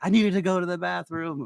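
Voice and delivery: high, shrieking, screaming woman's outburst. Retelling a plane story, a passenger comes out of the restroom: imitating a woman screaming. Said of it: "this lady comes out screaming".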